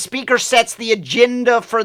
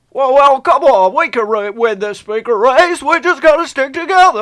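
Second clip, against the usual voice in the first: urgent voice, audibly starting to panic; 3 semitones higher, 3 dB louder than usual. Imitating Nancy Pelosi after a movie clip: mock panicked Nancy Pelosi voice. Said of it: "you can hear the panic in his voice. That's Nancy Pelosi right now".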